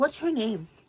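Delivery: mock grave, probing, questioning tone. Retelling how a girl asked her name: imitating a serious, questioning tone. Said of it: "she said it in such a serious".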